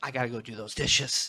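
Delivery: normal talking voice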